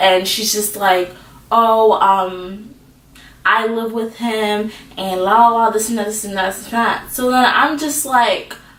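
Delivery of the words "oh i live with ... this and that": plain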